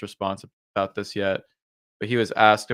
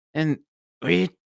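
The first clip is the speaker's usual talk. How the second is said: airy, light, pitched-up put-on puppet voice; 7 semitones higher than usual. Imitating how Trump sounds in the played clip: airy Muppet-like Trump impression. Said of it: "he kinda sounds like".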